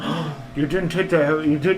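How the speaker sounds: high, loud, panicked sleep-talk.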